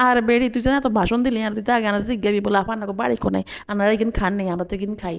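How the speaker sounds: ordinary talk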